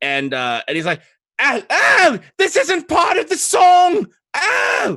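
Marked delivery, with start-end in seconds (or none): 1.4-5.0 very high-pitched, shrill, panicked, drawn-out shrieks and yells. Voicing a monster being clawed and bitten: shrieking and yelling. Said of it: "he shrieks and yells".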